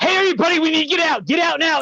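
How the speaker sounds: high, urgent, pushy mock voice.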